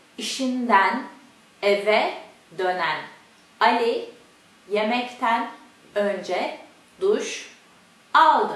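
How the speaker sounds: very slow Turkish, word by word, broken mid-phrase. Speaker demonstrating a turkish sentence before saying it quickly, very slow. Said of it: "The first one is slowly".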